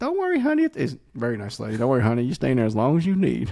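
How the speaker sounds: put-on sweet, swooping, sing-song girly voice. Retelling how a lady walked in on them in the store's beer cave, imitating a lady's girl voice. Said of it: "Do the girl's voice again".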